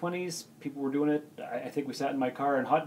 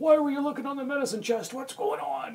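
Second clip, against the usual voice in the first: very high, agitated, upset biker voice; 12 semitones higher than usual. Retelling how an upset brother reacted to the find: [name]'s biker voice. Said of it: "in his biker [name] voice".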